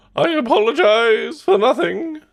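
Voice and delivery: very high-pitched, loud cartoon robot voice. A speaker tries out a Hedonism Bot impression. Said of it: "Can I do hedonism bot?".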